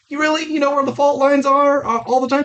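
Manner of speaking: mocking, high-pitched squeak.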